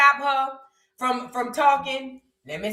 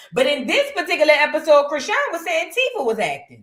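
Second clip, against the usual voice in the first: usual speaking voice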